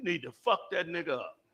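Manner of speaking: low, half-whispered demon voice. Acting out a demon urging a fight after a bump: demon half-whispering. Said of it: "a demon comes and whispers to me".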